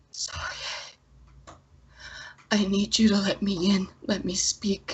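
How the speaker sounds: feeble, weak, faint, hushed voice. Voicing a mysterious presence speaking to a player: weak, faint voice. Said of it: "this voice that's weak and it's faint".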